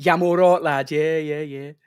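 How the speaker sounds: strong Birmingham accent. Showing how talking to a younger person sounds: proper brummie accent. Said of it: "go proper Brummie in it".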